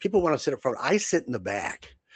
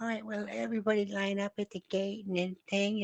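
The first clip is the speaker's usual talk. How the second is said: meek, mealy-mouthed, soft, pitched-up voice; 8 semitones higher, 7 dB quieter than usual. Retelling a gate agent's boarding call: imitating a mealy-mouthed gate agent. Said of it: "mealy-mouthed little gate person".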